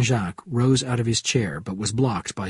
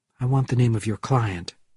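ordinary delivery

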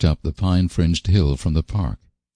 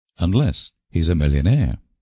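plain

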